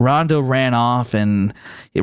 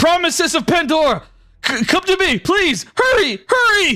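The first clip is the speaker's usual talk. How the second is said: very high-pitched calling-out yell. Voicing a character calling a group to come: yelling out. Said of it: "runs over and he yells out".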